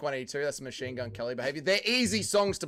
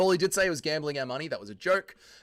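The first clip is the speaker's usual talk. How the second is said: plain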